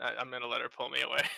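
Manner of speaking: plain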